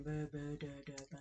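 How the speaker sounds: very soft, low, toneless, dead-level monotone. Complaining about an actress's delivery, imitating Natalie Portman's monotone. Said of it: "she just talked so monotone".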